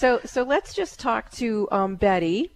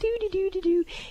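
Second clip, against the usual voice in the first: put-on very high, childlike singsong voice. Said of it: "she's a little like".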